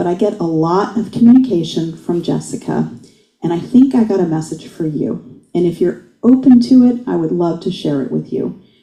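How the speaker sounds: normal talking voice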